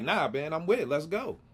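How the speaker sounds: ordinary delivery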